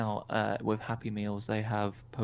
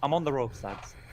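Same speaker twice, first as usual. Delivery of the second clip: fake Yorkshire accent with broad vowels; 4 semitones higher than usual. Attempting an Irish accent, the speaker slips into a put-on Yorkshire accent. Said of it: "You went from Irish to fucking Yorkshire".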